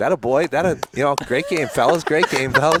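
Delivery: heavy, sour sarcasm, loud and high. Retelling own remark to players watching a game: imitating own sarcastic remark. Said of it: "my sarcastic self".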